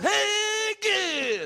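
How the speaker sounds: drawn-out delivery swooping up to a high pitch. Doing a comedian's impression of another comedian after a joke: Jay Moore doing Dice voice. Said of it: "I'm doing Jay Moore doing dice".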